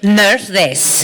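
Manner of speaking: slightly grumpy, grouchy character voice. Saying a requested game voice line in own character's voice: grumpy character voice. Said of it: "all of your characters sounded a little grumpy".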